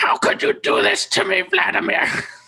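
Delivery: squawking, screechy, rough, creaky bird-person voice. Asked to imitate the bird person Leroy, using a screechy Leroy voice. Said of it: "It's more of like a screechy voice".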